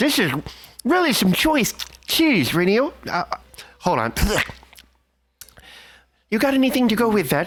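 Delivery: speaking through a mouthful, chewing between words. Playing a character who grabs a friend's cheese: talking while chomping on cheese. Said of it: "chomping on the cheese and I'm like".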